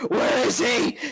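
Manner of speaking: in-character scream. Playing a character who jerks up in the scene: screaming in character. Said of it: "jerk up and I scream".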